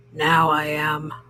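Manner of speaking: growling voice. Narrator reading a story gives a character's reply in a growly voice. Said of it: "said a growly voice".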